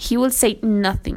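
ordinary talk

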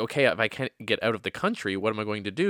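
plain

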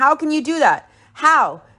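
tearful, sobbing, high, anguished wounded cry. Retelling an argument over private photos: imitating someone crying and yelling. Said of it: "And she cries, yelling".

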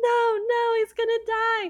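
put-on, very high-pitched, frantic freaking-out panic. Retelling a movie scene after Gothel stabs him, Rapunzel freaking out, put on. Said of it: "Rapunzel's like freaking out".

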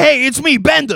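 very high-pitched cartoon character voice. Showing what the robot Bender sounds like: Bender voice. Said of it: "That's kinda what he sounds like".

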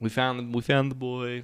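usual speaking voice

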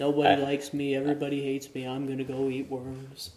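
cartoon storybook donkey character voice. Quoting a gloomy cartoon donkey's line: Eeyore impression. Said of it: "Did you like my impression?".

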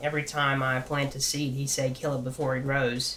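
ordinary delivery

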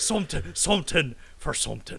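put-on pirate-like Irish accent. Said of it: "he does sound like a pirate".

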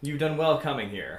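laughing and chuckling while speaking. Voicing a hooded figure greeting a player in a tavern: laughing while speaking. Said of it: "the figure kinda laughs and says".

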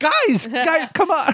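cracking put-on voice. Imitating documentary makers pleading that nobody watches: voice cracking while imitating. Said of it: "my voice really cracked there".

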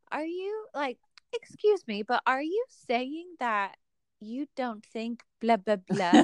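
mock overly polite, fake-sweet, passive-aggressive tone. Retelling how a woman says mean things, imitating her in a mock-sweet tone. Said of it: "in this tone of like, I'm nice to you".

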